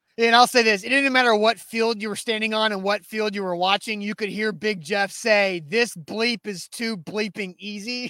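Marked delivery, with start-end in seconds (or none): none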